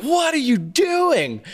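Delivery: high, slow, wide-ranging, suspicious scolding parent voice.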